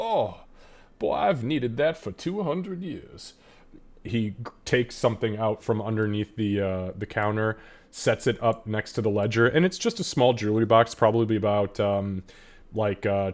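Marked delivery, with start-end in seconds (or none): 0.0-3.3 put-on decrepit, ancient, worn-out old man voice. Voicing an old shopkeeper whose spine cracks as he hunches: decrepit old man voice. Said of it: "takes a couple decrepit steps".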